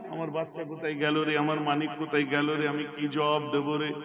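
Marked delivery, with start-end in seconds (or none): none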